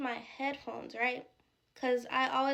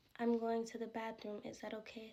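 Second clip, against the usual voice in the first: hushed, strange, off-kilter creepy eerie voice; 7 dB quieter than usual. Retelling how an Uber driver spoke before going into the gas station, imitating a weird, eerie tone. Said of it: "it was a weird, eerie tone".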